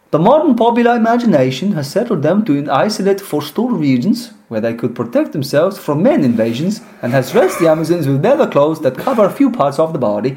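bad put-on Norwegian accent. Speaker tries out an accent while reading a passage aloud; bad Norwegian accent. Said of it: "That was a bad accent".

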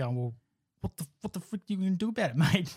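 high, fast, mock defensive outburst. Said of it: "and then would be like".

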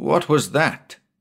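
nervous demanding tone. The skipper hurries from the companion and halts beside him, demanding nervously. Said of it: "he demanded nervously".

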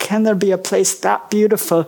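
plain

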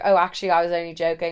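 normal talking voice

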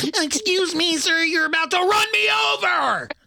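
tiny, squeaky, very high, pesky little voice. Pretending to be a small car confronting a truck driver: pesky little gnat voice. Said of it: "be a pesky little fucking gnat with my little baby car going".

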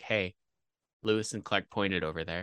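put-on deadpan tone. Speaker retelling what their wife said in the car: imitating a deadpan remark. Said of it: "my wife just turned to me deadpan and she was like".

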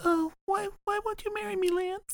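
put-on voice pushed really, really high. Imitating the character Nina, who talks really high: really high Nina voice. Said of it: "He talks really, really high like this".

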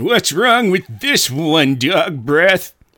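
full-on bratty, high character voice. Answering a cast member who asks for a new voice: Jack voice. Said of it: "I will retire that Jack voice".

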